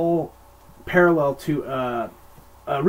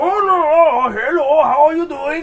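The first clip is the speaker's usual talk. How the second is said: shrill, very loud, very high, over-the-top fake drunk, long no; 13 semitones higher, 8 dB louder than usual. Retelling a film scene where a waiter fakes being drunk: imitating Mako acting drunk. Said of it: "he's acting like he's all drunk".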